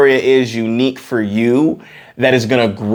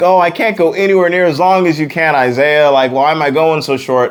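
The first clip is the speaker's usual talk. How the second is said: worried, fretful, stressed-out tone; 3 semitones higher than usual. Retelling how students complain about short breath: imitating a stressed-out student. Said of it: "they'll stress out about the length".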